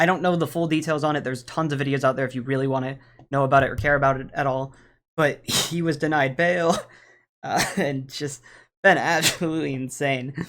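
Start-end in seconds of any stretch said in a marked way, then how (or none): 5.2-10.5 slow words spoken through hard laughter. Talking to viewers about a video, laughing while talking. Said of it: "I'm laughing really hard".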